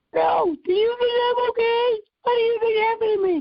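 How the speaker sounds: very high, squeaky, sarcastic cartoon voice. Retelling an answer to a man who asked if they were okay, Mickey Mouse voice. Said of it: "And I would do in a Mickey Mouse voice".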